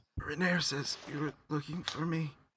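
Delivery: slight cough. Narrator voicing Floon answering the person who found him, Floon coughing a little. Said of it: "he just coughs a little bit and just says".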